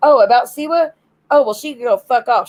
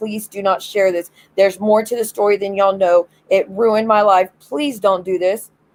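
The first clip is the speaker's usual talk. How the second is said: put-on desperate, begging tone; 2 semitones lower than usual. Retelling how she begged others not to share it: imitating own past begging. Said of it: "I was begging and pleading and begging and pleading".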